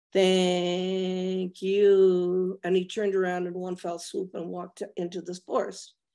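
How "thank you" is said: robot-like speech with stretched you. Retelling what a man said to him after three minutes, the speaker uses a robotic voice. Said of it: "in a robotic voice in English".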